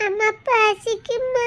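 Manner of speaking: put-on slow, small child's voice.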